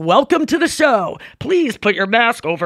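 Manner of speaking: offstage voice-of-god announcer delivery. Comedian demonstrating the backstage announcement heard before a show, voice of God. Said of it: "voice of God".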